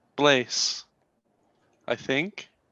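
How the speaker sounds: bewildered, dazed, unsure, halting delivery. Playing a man in a red cloak asked his name in a cave: dazed, confused. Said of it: "She sees a man in a red cloak. Blonde hair, blue eyes, pale peach skin. He's holding a lute in his hand that isn't holding the rock. And just slowly breathing, trying to make sense of the world. / She".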